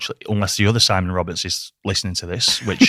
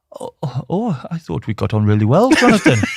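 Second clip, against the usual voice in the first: bad, unconvincing Welsh accent, high, sing-song; 6 semitones higher, 3 dB louder than usual. Retelling a man's reply after being asked about an email, bad Welsh accent as Si. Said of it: "my Welsh accent's not there yet".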